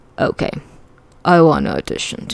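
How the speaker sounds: plain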